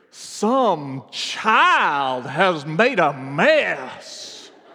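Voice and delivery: put-on old-fashioned Southern belle lady accent. Retelling what a lady said aloud in a restaurant, loud old Southern accent. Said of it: "an accent that made it sound like she stepped off of a plantation".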